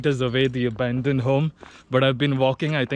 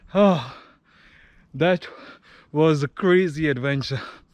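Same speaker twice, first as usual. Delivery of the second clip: winded, out of breath. After three hours of walking to an abandoned house; out of breath. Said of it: "I need to catch my breath".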